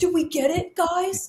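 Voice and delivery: mock-eager, excited, drawn-out delivery. Retelling what a bloodied wrestler asked backstage: imitating an excited wrestler. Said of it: "so excited, like, he didn't even pain".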